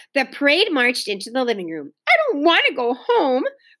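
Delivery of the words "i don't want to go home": stubborn, dug-in, high-pitched protesting tone. Howie, seeing his mother arrive to take him home, protesting. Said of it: "protested Howie".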